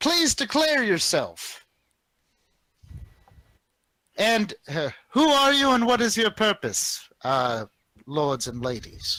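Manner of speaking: high, magically amplified voice. A hippogriff rider flying alongside the party calls out in a magically enhanced voice. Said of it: "speaks in a voice that is clearly magically enhanced".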